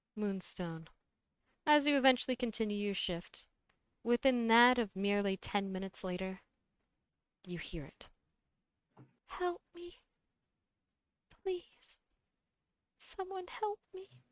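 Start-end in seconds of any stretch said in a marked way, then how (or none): 9.3-14.1 very high, faint, murmured whisper. Voicing an unseen voice calling for help: murmured whisper. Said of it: "Almost sounding like that of a whisper of words".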